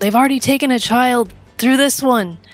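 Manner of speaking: high, in-character voice calling out loudly. Warning others before running toward a portal: shouting in character. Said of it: "I'm gonna shout".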